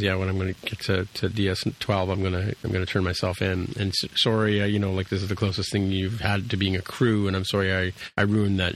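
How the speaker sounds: ordinary talk, nothing marked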